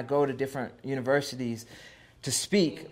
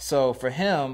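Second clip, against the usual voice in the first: ordinary delivery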